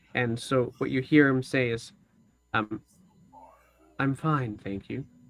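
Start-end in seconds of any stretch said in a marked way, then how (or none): 4.0-5.1 smooth, sultry man's voice, quieter. Game narrator voicing a man's reply, in a sultry, smooth man's voice. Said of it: "a very sultry, smooth voice".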